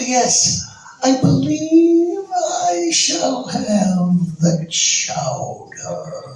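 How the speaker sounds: tiny, very high, very slow voice. Retelling overhearing a diner order food: Sterling Holloway little voice. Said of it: "And you hear this little voice".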